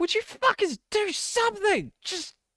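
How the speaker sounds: very high scream of pain and panic. Bilbo, on the ground with a ghoul ripping at him, yells to the group: screaming. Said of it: "he's screaming as this thing is going at him".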